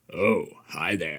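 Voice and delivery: deep, low, hushed, creepy horror-geek voice. Showing the co-host how a horror geek impersonation is done. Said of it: "let me show you how it's done".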